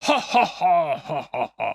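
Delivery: loud, very slow creature laugh, each ha stretched. Describing a film scene, imitating the Predator's laugh. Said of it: "That was my Predator laugh there".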